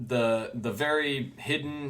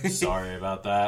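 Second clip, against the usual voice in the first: put-on casual offhand tone, lower pitch; 4 semitones lower than usual. Retelling what a character says on opening the door: imitating a nonchalant character. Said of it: "he's just so nonchalant about everything he says".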